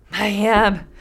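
breathless voice. Reading a folk tale aloud, a running man answers: breathless. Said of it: "The first man said breathlessly".

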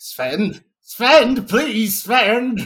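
very slow, high, drawn out, through gritted teeth. Voicing the professor calling sven for help: through gritted teeth. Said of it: "out of the corner of his, uh, gritted teeth".

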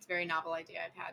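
dry, deadpan sarcastic delivery.

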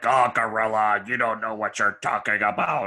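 voice dropped low into chest, dismissive. Praising an announcer partner, imitating Jesse: Jesse deep voice. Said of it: "I just loved his deep voice, like".

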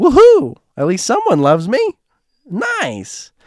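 very high, long, swooping, overjoyed whoop. Retelling calling dad to say I love you: imitating dad being all happy. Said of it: "He was all happy".

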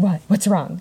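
ordinary delivery

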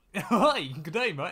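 put-on clumsy, drawn-out Canadian accent. Imitating how the Latifis would answer: bad Canadian accent as Latifi. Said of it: "I can't do a Canadian accent".

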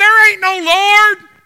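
very loud, high, furious angry yell. Storyteller quoting an atheist neighbor shouting back at a praising lady, retelling an angry shout. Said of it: "he would stand out back and he would shout".

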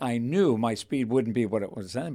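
ordinary talk

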